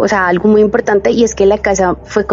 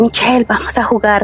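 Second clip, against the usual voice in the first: put-on whispering voice. Speaker recalls voices heard as a small child, imitating a whispering voice. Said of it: "escuchaba así como el susurro de".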